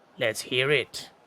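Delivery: gritty voice of an orc. Voicing an orc smith answering a proposition: gritty orc voice. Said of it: "the gritty voice and the".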